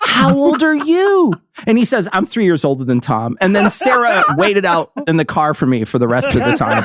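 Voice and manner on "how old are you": mock very high, condescending, pandering talking-down tone. Retelling a woman leaning down to ask the speaker's brother his age, mock-condescending child-pandering tone. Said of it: "in the most condescending and obvious child pandering tone".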